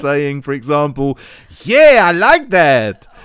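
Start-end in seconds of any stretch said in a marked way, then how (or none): 1.6-2.9 very loud, drawn-out, put-on Spanish accent. Trying out accents with another speaker, giving an example line in a Spanish accent. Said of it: "Or a Spaniard".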